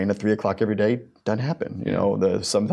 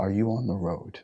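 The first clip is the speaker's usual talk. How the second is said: small, soft, tiny, solemn little-man voice; 5 dB quieter than usual. Retelling what a man told people on the road, imitating his tiny solemn voice. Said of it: "his tiny little man, solemn voice".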